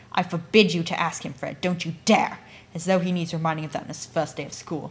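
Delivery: very stern, severe, forbidding tone. Narrator reading a mother forbidding her son to ask a boy something, very stern. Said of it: "Their mother suddenly became very stern".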